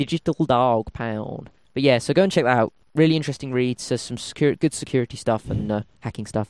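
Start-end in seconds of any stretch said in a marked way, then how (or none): 0.0-1.5 American Southern accent. Repeating a website name in a different accent, Southern accent. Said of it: "Southern accent".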